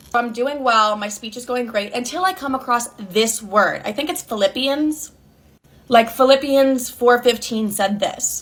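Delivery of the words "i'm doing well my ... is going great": ordinary talk, nothing marked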